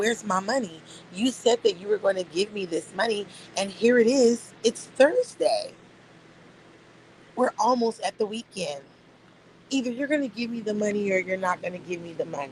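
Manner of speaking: mock livid, mad-as-hell fury. Retelling what was said to someone who owed money: retelling an angry confrontation. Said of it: "I'm livid. I'm mad as fuck".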